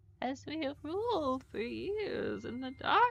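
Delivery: cracking voice. Trying to imitate another voice's line, with voice cracks. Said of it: "there's like random voice cracks".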